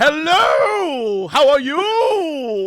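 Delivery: loud, very slow, overacted, very drawn-out "hello". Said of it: "go to, like, every spectrum".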